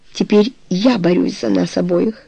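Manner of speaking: ordinary talk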